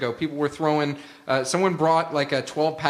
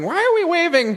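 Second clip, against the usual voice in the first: put-on old lady voice, higher and louder; 7 dB louder than usual. Joking about playing to old people: imagined old grandmother voice. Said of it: "an old grandmother who's sitting there waving, going".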